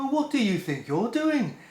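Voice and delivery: rough put-on Brummie accent. Retelling what a security guard said on catching the speaker recording, Brummie accent. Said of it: "Brummie accent, which I'm not, I can't really do a Brummie accent".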